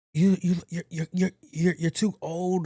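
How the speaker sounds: high, sputtering, stammering, going-off yell. Retelling a young guy yelling at him at a light, imitating someone yelling. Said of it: "like just just yelling at me".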